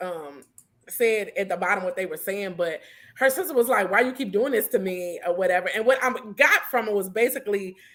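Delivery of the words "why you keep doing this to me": usual speaking voice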